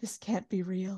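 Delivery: quiet, hushed whisper under the breath. Retelling a reality show scene, imitating Schwartz whispering. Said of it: "And Schwartz just whispers".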